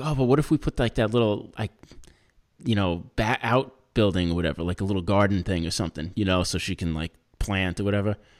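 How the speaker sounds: ordinary delivery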